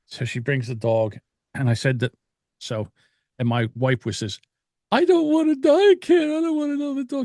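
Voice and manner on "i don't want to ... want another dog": mock very high, tearful, crying voice. Retelling what a crying wife said about getting another dog: imitating someone crying. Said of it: "She's crying in bed".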